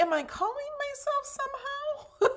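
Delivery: very high, laughing, puzzled tone. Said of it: "That's why I was like".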